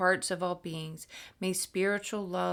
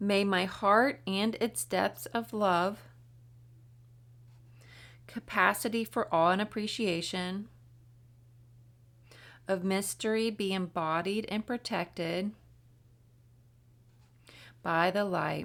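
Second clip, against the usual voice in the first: slow reading with pauses. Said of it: "I'll do the same thing where I read slow".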